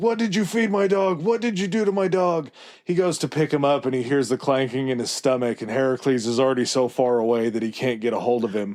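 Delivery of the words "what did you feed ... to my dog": full-on, high-pitched screaming. Retelling how Hades screams at Heracles: imitating Hades screaming. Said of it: "he starts screaming at Heracles".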